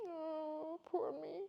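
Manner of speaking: teary, crying, complaining tone. Retelling going to a teacher in tears: imitating own past crying. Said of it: "I cried and I was like".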